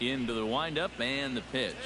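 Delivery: plain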